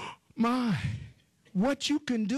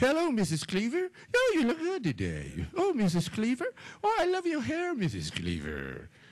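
sing-song fawning tone, swooping up and down. Imitating a flattering prayer, acting out Eddie Haskell greeting Missus Cleaver: Eddie Haskell voice. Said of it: "most folk pray the Eddie Haskell prayer".

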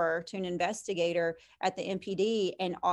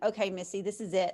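acted-out frustrated outburst. Retelling pleading with Missy from a boot camp truck, retelling a frustrated outburst. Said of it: "hitting the steering wheel on my boot camp truck going".

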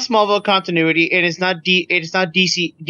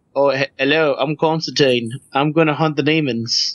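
slow, drawling put-on British accent; 4 semitones lower than usual. Mocking a show's character joining the cast: Constantine impression. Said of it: "He's just like".

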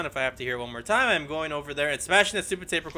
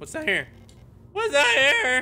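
very high, loud voice breaking mid-line; 11 semitones higher, 6 dB louder than usual. Gamer exploring rooms and spotting something new, voice cracking. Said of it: "Voice crack!".

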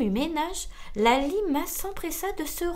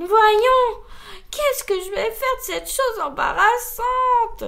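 very loud, high, horrified moan; 7 semitones higher, 9 dB louder than usual. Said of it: "Gémit-elle, horrifiée".

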